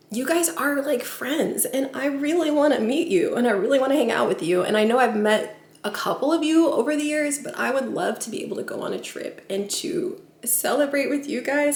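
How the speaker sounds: tearful crying, voice breaking through the words. A speaker talks to viewers from the kitchen, crying while speaking. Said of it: "I don't know why I'm crying".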